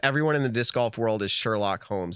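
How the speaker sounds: normal talking voice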